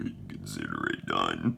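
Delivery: very deep, low, creaky, rough, odd voice. Narrating a story, voicing a character's reply in a weird character voice. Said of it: "I'm trying to make weird voices".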